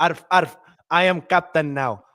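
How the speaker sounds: put-on Spanish pirate accent, growled. Answering a request to do a pirate bit: spanish pirate accent. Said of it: "You need to do the Spanish pirate accent".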